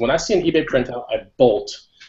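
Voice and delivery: ordinary talk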